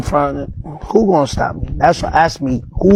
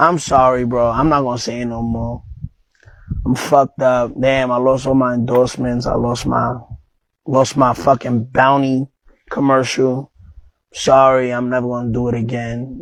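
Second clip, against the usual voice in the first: slow, clownish, plainly insincere fake-sorry tone; 3 semitones lower than usual. Acting out the apology people supposedly want, mock apology. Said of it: "You see how clown that shit is?".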